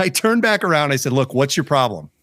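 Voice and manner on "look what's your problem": level, cool, calm voice with cocky attitude. Retelling confronting a neighbor over a fence: calm but with some attitude. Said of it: "Very calmly, but with some attitude".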